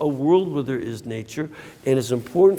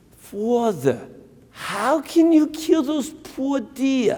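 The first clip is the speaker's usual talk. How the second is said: put-on woman's New York accent, pitched up; 9 semitones higher than usual. Priest retelling what a lady at his retreat asked him: New York accent. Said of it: "in that wonderful New York accent".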